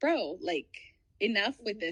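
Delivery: ordinary delivery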